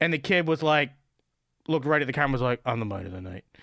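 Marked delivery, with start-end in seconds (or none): 2.7-3.4 completely deadpan, very low, quiet, flat, acted. Retelling a kid's answer straight into the camera: completely deadpan Steven Wright style. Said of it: "completely deadpan Stephen Wright style".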